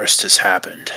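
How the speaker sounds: quiet, soft, low-key delivery. Game narrator voicing a character who looks Xanth over, quietly. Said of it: "just quietly says".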